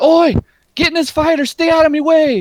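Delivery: very high, loud, shouted calling out in character voice. Voicing a dagger-wielding woman who calls to players entering: calling out in character. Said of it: "calls out and she's like".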